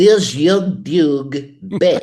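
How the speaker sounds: put-on French accent impression. Explaining a French accent learned from Pink Panther: Inspector Clouseau French accent. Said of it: "my only French accent comes from the Pink Panther movies. Like".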